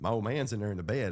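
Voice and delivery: ordinary delivery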